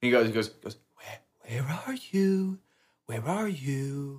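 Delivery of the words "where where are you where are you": quiet, drawn-out whisper. Retelling a scene where a boy at a window speaks: imitating a whisper. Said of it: "he's kinda whispering".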